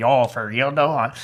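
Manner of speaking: put-on drawn-out, slow Toronto gangster-style accent. Describing how people in Toronto talk, Toronto gangster accent. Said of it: "this weird kind of like gangster accent".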